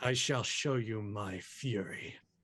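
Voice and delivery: voice deliberately pushed down an octave, very low. Answering a challenge with a boast, in a deliberately lower voice. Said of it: "purposefully shifting his voice into a lower octave".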